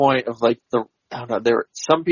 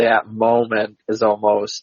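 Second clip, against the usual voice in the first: ordinary talk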